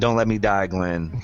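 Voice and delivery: mock-begging voice. Narrating a man hanging directly under another, acting out his begging. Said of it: "And begs to Glenn".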